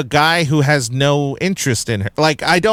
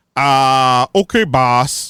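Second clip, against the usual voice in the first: dim-witted, dopey zombie voice. Mocking a villain as a dumb zombie sidekick: imitating a dumb zombie sidekick. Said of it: "you might as well have had him go like".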